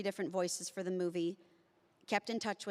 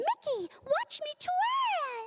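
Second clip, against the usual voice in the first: slow squeak, "twirl" stretched out; 5 dB louder than usual. Speaker recalls a Mickey and Minnie float passing at lunch, doing a Minnie Mouse impression. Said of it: "did that impression of it".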